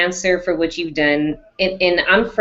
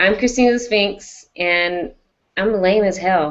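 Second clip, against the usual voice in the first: normal talking voice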